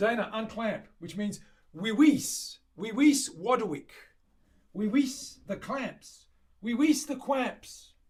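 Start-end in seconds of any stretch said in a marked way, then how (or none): 1.0-7.9 lisping voice with every r turned to w. Showing how a written instruction could be said, Monty Python lisping Roman voice. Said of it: "like that Roman guy with the lisp or with the funny accent".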